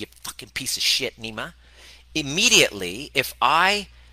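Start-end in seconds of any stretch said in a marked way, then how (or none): 0.0-1.5 put-on mild yelling, quieter. Acting out a partner who insults the speaker: acting out a raised voice. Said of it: "you just raise your voice a little bit".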